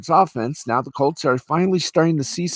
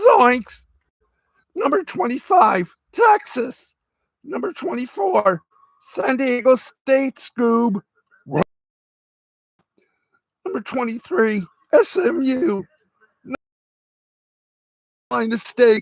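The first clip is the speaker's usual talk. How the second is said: goofy, high-pitched cartoon voice; 9 semitones higher than usual. Announcing the AP Top 25 rankings, the speaker reads them in Shaggy's voice. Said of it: "I'm going to do this all in Shaggy's voice".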